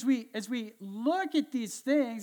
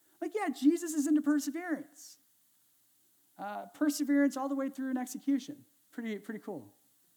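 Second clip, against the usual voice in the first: high, sarcastic aside voice. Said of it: "I'm so, so sarcastic".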